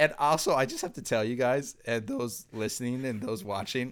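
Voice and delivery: breaking voice. Speaking to those listening and watching, voice cracking. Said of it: "your voice is cracking".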